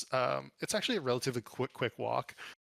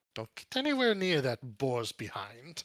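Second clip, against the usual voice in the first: animated voice with wide, swooping pitch swings. Voicing a character warning a player away from his boar: Balthazar voice. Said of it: "Balthazar gives you a sharp look and he goes".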